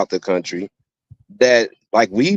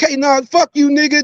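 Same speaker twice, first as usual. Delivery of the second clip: defiant, very high-pitched, drawn-out yell. Acting out losing temper with the other speaker: mock angry outburst. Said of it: "if me and you get out of tone".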